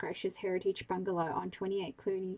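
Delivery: plain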